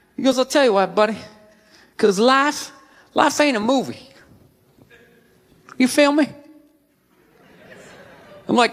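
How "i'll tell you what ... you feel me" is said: cryptic-sounding, folksy backwoods country speech. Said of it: "speaking in these backwoods riddles".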